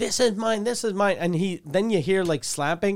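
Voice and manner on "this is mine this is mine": play-acted, possessive outburst, yelling but kept contained. Retelling a recording of a man yelling at his girlfriend: imitating someone yelling. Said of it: "And then he's yelling".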